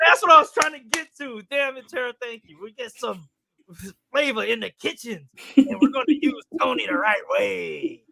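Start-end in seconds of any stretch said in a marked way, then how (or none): 2.6-7.9 cheesy, corny delivery. Reading a write-up through the other speaker's lens: imitating Matt Donnelly, corny. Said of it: "that's how you sound to me".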